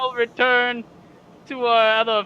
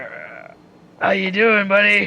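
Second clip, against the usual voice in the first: hushed stage whisper; 2 semitones lower than usual. In a role-play scene, a character quietly greets Ricky, half-whispering. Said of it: "I'm whispering to Ricky".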